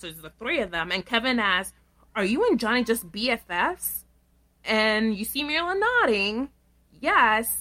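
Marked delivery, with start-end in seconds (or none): none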